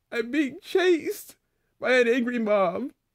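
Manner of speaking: sobbing, tearful, high crying voice. Answering a partner who asks why they are scared, crying. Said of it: "Why are you crying?".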